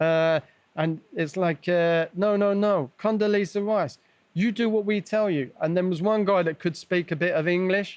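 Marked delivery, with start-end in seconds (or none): 2.1-5.5 high, shrieking, screaming voice. Recounting an interrogation, the speaker imitates an interrogator screaming at the speaker. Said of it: "screaming at me".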